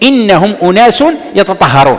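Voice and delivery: ordinary talk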